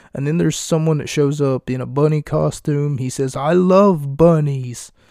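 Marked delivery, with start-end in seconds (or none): 3.4-4.9 the most exaggerated, laid-on British accent. Retelling what a man in a bunny costume said, in the most British accent imaginable. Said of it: "in the most British accent that you can ever imagine".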